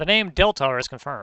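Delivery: ordinary delivery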